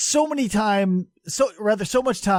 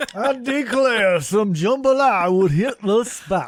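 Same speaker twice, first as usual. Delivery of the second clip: put-on, fake Southern accent. Joking about a trip to New Orleans, put-on Southern accent. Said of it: "You can tell by my authentic pronunciation".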